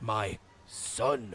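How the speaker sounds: very deep, dark, sinister, heavy stress on "son". Discussing voice acting in games, quoting Geppetto: sinister Geppetto voice stressing 'son'. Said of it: "sinister voice like Geppetto".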